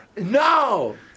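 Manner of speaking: very high, loud, anguished scream. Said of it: "deje de gritar".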